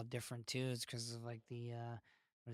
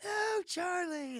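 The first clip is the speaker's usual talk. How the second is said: put-on scream, higher and louder; 6 dB louder than usual. Retelling the boy's reply to his helper: imitating someone screaming. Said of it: "And he was like".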